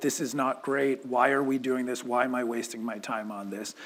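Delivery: ordinary delivery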